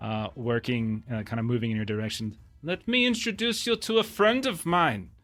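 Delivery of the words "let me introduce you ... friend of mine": pitched-up, acted, put-on German accent. Telling a story, voicing a character who introduces a friend: German accent. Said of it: "the laughter of his German accent".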